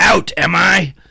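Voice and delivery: very high, cartoonish, villainous goblin voice. Explaining the movie reference, repeating the quote in a Green Goblin voice. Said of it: "That's the Green Goblin".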